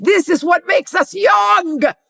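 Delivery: put-on Israeli accent. Retelling what a man leaned in and said while you both giggled like school kids, imitating his Israeli accent. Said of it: "in his Israeli accent goes".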